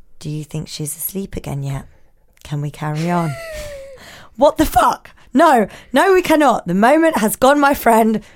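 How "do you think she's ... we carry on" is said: mock-calm, quieter and lower. Retelling what her husband said after she came back to bed: retelling calm words. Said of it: "He then calmly says".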